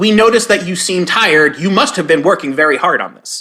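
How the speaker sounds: plain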